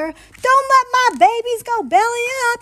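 loud, very high, drawn-out wailing howl. Narrator reads Daddy's line as the family starts to sink, howling. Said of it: "howled Daddy".

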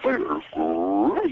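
throaty voice pushed up from the back of the throat. Asked to give one, the speaker says it in Tony the Tiger voice. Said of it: "the voice of Tony the Tiger ... it always kind of comes from the back".

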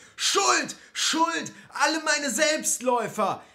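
very high, shrill, roaring bellow. Narrator reading Alexander's mantra shouted at an angel, roaring. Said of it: "brüllte".

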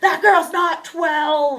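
wild, high, loud, drawn-out frantic yell. Retelling the other side's parents at a soccer game: imitating parents yelling wildly. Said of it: "going crazy".

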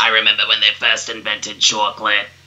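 cartoon lizard-alien character voice. Speaker shows listeners the voice from SpongeBob SquarePants, a reptilian alien voice. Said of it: "probably recognize that voice".

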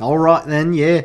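fake Australian accent sounding British. Reacting to a guest who says he's genuine australian today: attempted australian accent. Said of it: "That was a little more British than it was Australian".

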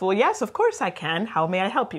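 put-on very cheerful, sunny, obliging agent voice. Acting out a customer service agent who speaks English: imitating a cheerful, helpful agent. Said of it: "a very cheerful and helpful".

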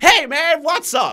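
drawn-out, excited hype voice. Showing how they would sound in a Let's Play video: excited voice. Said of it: "if I try to sound excited like I would in a Let's Play video, I would sound like this".

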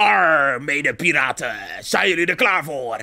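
low stage pirate voice, arr and all. Asked on stream to come up with a pirate voice, greeting fellow pirates in a pirate voice. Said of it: "we moeten onze piratenstemmen horen".

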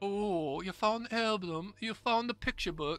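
put-on granny voice, pitched high. Telling a story about Fooster's family: Fooster's grandma voice. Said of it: "That's my impression of Fooster's grandma".

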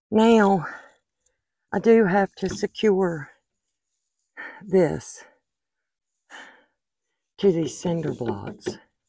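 huffing and puffing. Right after a struggle to get something stuck to move, out of breath. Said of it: "I'm out of breath".

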